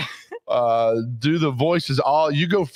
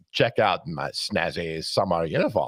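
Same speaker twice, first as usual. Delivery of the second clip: deep voice, dropped right down; 10 semitones lower, 5 dB quieter than usual. Reading a mailman's comic strip line: Hannibal Lecter voice. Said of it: "here's Hannibal Lecter as the mailman".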